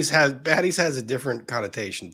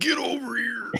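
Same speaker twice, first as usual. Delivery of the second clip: very high, soft, hushed calling voice; 12 semitones higher, 5 dB quieter than usual. [name] does a video-game catchphrase for the others, as Scorpion. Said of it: "like the Scorpion Mortal Kombat".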